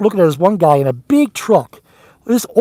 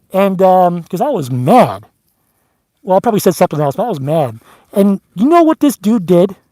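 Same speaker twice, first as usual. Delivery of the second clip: usual speaking voice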